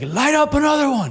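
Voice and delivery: very high-pitched, lively, energetic delivery. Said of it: "at him with energy".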